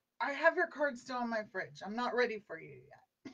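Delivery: ordinary talk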